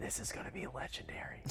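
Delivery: soft, unvoiced whisper.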